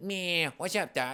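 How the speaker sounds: slow, drawling cartoon rabbit voice. Recalling a Jack Benny show CD, quoting one of its cartoon characters: Bugs Bunny voice. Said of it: "he was the voice of every character on the original Looney Tunes".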